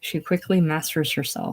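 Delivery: ordinary delivery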